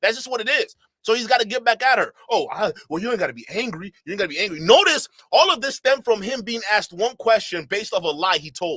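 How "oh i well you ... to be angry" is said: mocking passive-aggressive tone, lower. Mocking how he answered her: mocking imitation, passive-aggressive tone. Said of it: "these passive-aggressive weirdos like Sus Marquardt".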